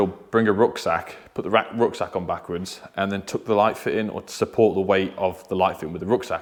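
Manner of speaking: usual speaking voice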